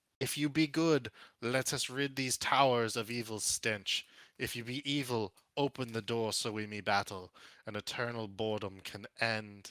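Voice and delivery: rough, rasping female gargoyle voice. Narrating a scene, a lady gargoyle calls out from beyond the door, in a raspy gargoyle voice. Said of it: "A raspy voice calls out from beyond".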